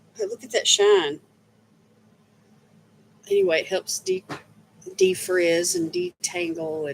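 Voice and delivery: very high, very slow, creaky, broken by hiccups. Showing off a leave-in conditioner, with hiccups. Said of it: "I got the hiccups all of a sudden".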